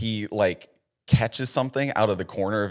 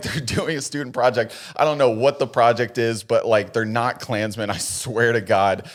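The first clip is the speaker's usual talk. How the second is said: ordinary talk, nothing marked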